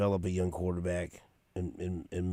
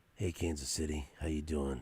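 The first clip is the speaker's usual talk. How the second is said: joking, soft, sultry put-on seductive bedroom voice; 3 semitones lower, 3 dB quieter than usual. Greeting Kansas City listeners as a joke: put-on bedroom voice. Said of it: "This is a bedroom voice".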